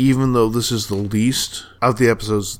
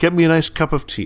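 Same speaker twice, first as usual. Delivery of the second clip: put-on, empty-headed South London accent, pitched up; 6 semitones higher than usual. Police characters ignore trouble to the northeast; vacuous South London accent. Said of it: "They suddenly turn really British".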